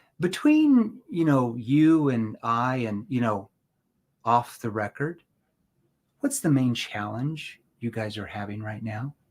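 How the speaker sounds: genuinely curious, inquisitive tone. Demonstrating tone with an off-the-record question, asked in a curious tone. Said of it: "what did I do with my tone? ... That is a curious".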